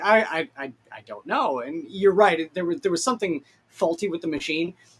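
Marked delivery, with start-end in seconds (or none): 0.0-1.6 put-on stammering character voice. Retelling how Fulgrim answers when asked about the machine: imitating Fulgrim stammering. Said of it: "Fulgrim leans in and goes like".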